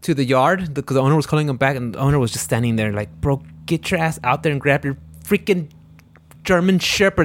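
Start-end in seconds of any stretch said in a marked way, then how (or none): none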